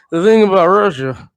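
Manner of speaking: slow, drowsy, sedated-sounding, drawn-out drawl. Mocking a politician's speech, imitating Joe Biden's drowsy speech. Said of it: "he always sounds like he ate a Xanax".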